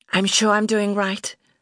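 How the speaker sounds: forced briskness while tearful. Deborah answers after being told to take care, brisk despite tears. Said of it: "striving for briskness, though the tears were running".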